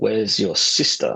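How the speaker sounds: put-on menacing, threatening voice. Retelling what a flying thing asked in the bedroom, retelling a threatening voice. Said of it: "in this threatening voice".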